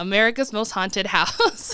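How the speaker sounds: ordinary talk, nothing marked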